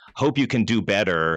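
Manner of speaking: sniffy, snotty, condescending, talking-down brush-off tone. Imitating the snotty tone people use replying to tweets. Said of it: "that really like snotty tone of voice that people use".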